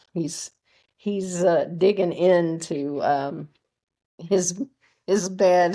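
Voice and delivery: talking while laughing through the words. Speaker interrupted by their dog mid-session, laughing while talking. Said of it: "I'm laughing because my my dog".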